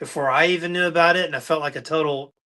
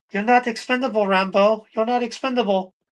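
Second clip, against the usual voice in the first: put-on female voice, pitched up; 6 semitones higher than usual. Showing a Rambo figure, imitating the girl from Rambo Two. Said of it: "I keep wanting to do the girl's voice".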